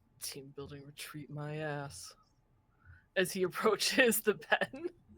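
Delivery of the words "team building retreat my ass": soft, muttered grumble under the breath. A game master narrates what a character mutters approaching the pen: muttering under breath. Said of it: "mutter under his breath".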